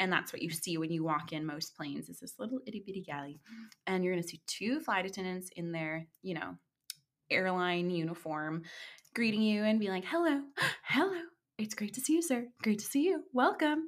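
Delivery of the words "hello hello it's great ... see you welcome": put-on doll-like, dolly girlish voice. Walking the listener through boarding a plane, greeting like flight attendants: imitating Barbie-esque flight attendant greeting. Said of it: "Like the very Barbie-esque".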